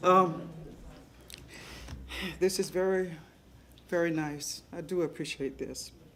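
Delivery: speaking through tears. Thanking the audience for recognizing them, the speaker is crying while talking. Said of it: "And I didn't know I was going to cry".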